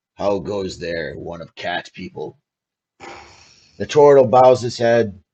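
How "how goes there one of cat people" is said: very low, rough, gruff orc voice. Narrating a fantasy scene, voicing an orc greeting you, gruff orc voice. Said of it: "Both of them have very gruff voices".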